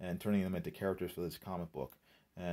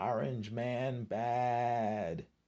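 pitched-up screech, badly drawn out; 5 semitones higher than usual. Speaker mocking a list of politicians all at once: mock screeching. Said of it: "And they're all screeching".

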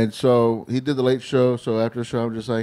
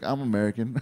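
put-on tone with attitude, quieter; 6 dB quieter than usual. Retelling a kid comic's answer about where he's from: imitating someone saying it with attitude. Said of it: "he said it with an attitude".

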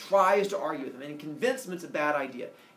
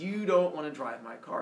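usual speaking voice

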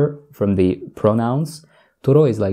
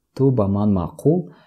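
usual speaking voice

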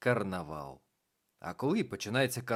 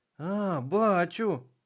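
delighted, happy, glad, high, raised voice; 7 semitones higher, 7 dB louder than usual. A narrator reads the little witch answering her companion; gladdened. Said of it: "зраділа мала баба Яга".

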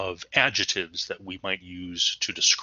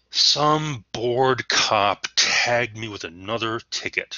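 loud, bitter, resentful, defiant grumble; 3 semitones higher, 5 dB louder than usual. Showing the reader the tone you might assume saying this, resentful tone. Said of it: "kind of a resentful tone and perhaps even a defiant".

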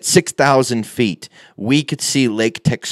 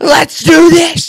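screaming, pitched much higher; 9 dB louder than usual. Retelling the moment before his paid jump, screaming at the camera. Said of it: "I'm just screaming at the camera".

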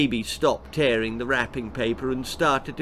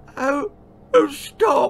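gasping, much higher and slower; 11 semitones higher than usual. Narrator reading an old lady's reply to her granddaughter, gasping. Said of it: "gasped the frail old lady".

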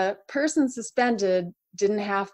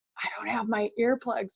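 soft, hushed half-whisper under the breath; 7 dB quieter than usual. Telling a story, the speaker repeats what he half-whispered to her, retelling a half-whisper. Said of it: "he whispers to me".

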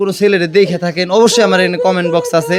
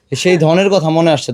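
ordinary talk

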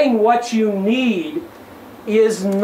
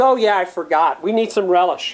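put-on, heavily dripping sarcastic tone; 2 semitones lower than usual. Acting out a character's reply in a dialogue, mock-sarcastic. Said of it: "Plato being as sarcastic as ever".

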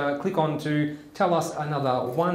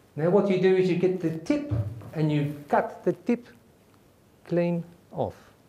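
best-effort, put-on South African accent. Telling a friend's military joke: South African accent. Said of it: "my best South African accent".

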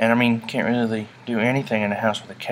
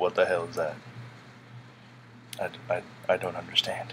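big, deep, serious, breathy whispered voice; 5 semitones lower, 10 dB quieter than usual. Pretending a cat sees itself and talks: big deep voice, serious tone. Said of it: "when I pretend he's talking, I make him have, like, a big, deep voice and, like, a serious tone".

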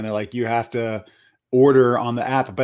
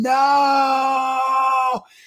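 play-acted long, very high, drawn-out shriek; 13 semitones higher than usual. Retelling suddenly screaming under a bridge beside her daughter: imitating her own screaming. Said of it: "I just started screaming".

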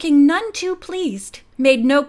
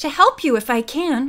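plain

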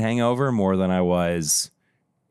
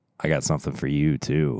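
low voice, much lower; 6 semitones lower than usual. On a show episode, replying to the co-host, said low. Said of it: "I like how you said that so low".

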